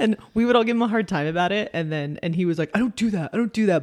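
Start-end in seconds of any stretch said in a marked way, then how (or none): 2.7-3.8 play-acted, high, defensive protesting tone. Retelling how a teased man denied it: imitating someone getting defensive. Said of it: "he gets all defensive".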